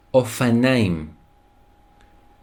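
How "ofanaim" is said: ofanaim drawn out slowly, sounded out. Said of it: "a bicycle in Hebrew is".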